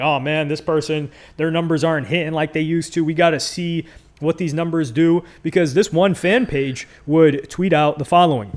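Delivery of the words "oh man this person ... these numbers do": ordinary delivery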